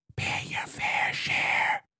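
eerie, slow, creepy whisper, barely audible. Imitating someone the speaker won't name, in a creepy whisper. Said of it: "creepy whisper".

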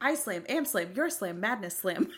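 run-together machine-like reading. Retelling how the audiobook narrator read a scene: imitating Alexa reading without pausing. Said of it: "She didn't pause at all".

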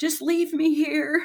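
put-on yelling. Retelling freezing with fear on a ladder: imitating her own screaming. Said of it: "I was screaming and yelling at him".

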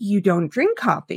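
imitated whispering voice. Retelling a dinner party where mom replied quietly: imitating mom's whisper. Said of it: "My mom whispered back".

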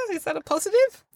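tentative, uncertain voice. Asking another speaker whether a book blurb is praise: unsure, tentative tone. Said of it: "that very unsure, tentative way you just said it".

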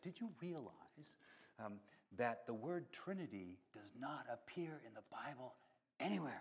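very quiet, hushed, conspiratorial aside. Retelling what people asked the speaker about the Bible: mimicking a conspiratorial tone. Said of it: "kind of conspiratorially".

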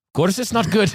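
put-on terrible, very high-pitched Scottish accent. Speaker quoting the man filling the whiskey barrel, bad Scottish accent. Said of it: "terrible, terrible yeah, just, Scottish just accent".

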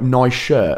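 ordinary delivery

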